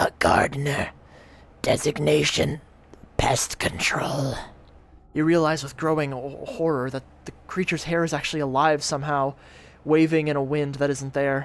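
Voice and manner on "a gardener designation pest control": slow, halting, rasping monster speech in broken bits. Narrator reads the monster Noctulicent answering: halting, rasping Noctulicent voice. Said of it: "address you in a halting, rasping voice".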